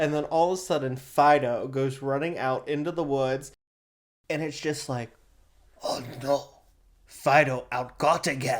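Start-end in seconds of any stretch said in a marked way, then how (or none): 5.8-8.6 slow, odd, put-on alien voice. Acting out an alien whose dog ran into the woods: put-on alien voice. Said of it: "Which is alien for".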